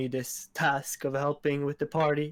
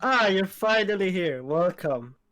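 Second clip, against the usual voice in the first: happy, bright, lifted host voice; 5 semitones higher, 4 dB louder than usual. Playing a character greeting someone with open arms, happy voice. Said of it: "in a happy voice".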